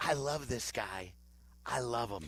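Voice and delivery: soft, hushed whisper, far from the mic. Retelling what was said to people away from the live mic: imitating own whisper. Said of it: "that was me whispering to these people".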